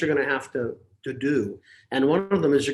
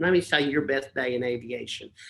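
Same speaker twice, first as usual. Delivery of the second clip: put-on Texan accent, drawled for fun. Retelling what an instructor told a would-be student: funny Texas way of talking. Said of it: "when he talks like that".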